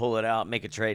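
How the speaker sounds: ordinary talk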